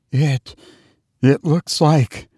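stammering in intense horror. A woman, told something has appeared every night since a death, stammers in intense horror. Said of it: "stammered Mrs. Brigham in a tone of intense horror".

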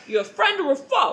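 put-on New Jersey accent. Retelling a talking plant questioning a man in a story: Jersey man voice. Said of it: "in, like, a fucking, like, Jersey man voice".

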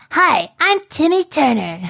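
cartoonish voice swinging very high. Trying out a cartoon voice to read a story aloud: Timmy Turner voice. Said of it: "I have to see how to do his voice".

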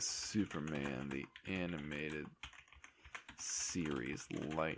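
very quiet, low murmured narration. Looking something up, the speaker says aloud what they type, like a movie hacker. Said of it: "I'm talking like a hacker in a movie when I'm saying everything that I type".

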